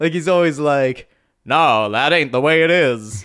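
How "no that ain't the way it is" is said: put-on old movie cowboy voice. Describing a character's American English dub voice, in John Wayne-style old cowboy voice. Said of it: "old cowboy".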